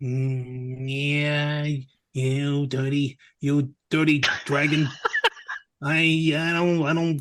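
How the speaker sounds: put-on very slow, stumbling old Hollywood movie voice, long drawn "mm". Playing a character facing a dragon, the speaker does a Humphrey Bogart voice. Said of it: "That was [name]".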